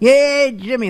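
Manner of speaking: put-on very high, chummy, pally voice. Mocking a caller's greeting as if they were old pals: mocking chummy greeting. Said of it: "like old pals".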